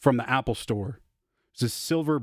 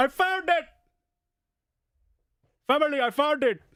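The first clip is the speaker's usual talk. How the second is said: put-on, very high-pitched Indian accent. Doing an impression of an indian man who finds something he lost, indian accent impression. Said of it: "my impression of an Indian guy".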